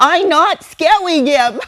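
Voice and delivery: put-on tiny, very high, loud, shrill, drawn-out toddler voice. Retelling what a three-year-old said back to a parent: imitating a three-year-old's voice. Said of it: "in his little three-year-old voice".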